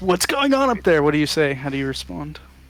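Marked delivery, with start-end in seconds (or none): 0.0-1.0 shrill, very high shouted yell. The narrator, as Lumen, calls up toward the window: Lumen yelling. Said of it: "Lumen yells".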